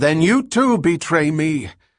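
high-pitched outcry, called out. As the sergeant drops his blaster, Rachel is crying out. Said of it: "Rachel cried out".

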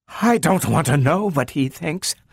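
high-pitched words gasped out. Narrator reads a woman answering with her head bent: gasped. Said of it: "she gasped".

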